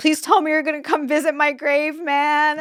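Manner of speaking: tearful, weeping, high-pitched crying voice. Retelling a man convinced he was dying, talking to the speaker's dad: imitating someone crying. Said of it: "he's like crying and he's telling my dad".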